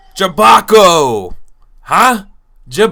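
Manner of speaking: very loud, broken, clumsy made-up gibberish. Voicing a character badly trying to speak a foreign tongue: clumsy made-up gibberish language. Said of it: "I'm just gonna make up some words and some gibberish".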